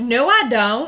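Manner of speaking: American Southern drawl. Denying having a southern accent, in a southern accent.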